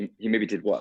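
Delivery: New Zealand accent with letters dropped. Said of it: "I immediately go to Flight of the Conchords".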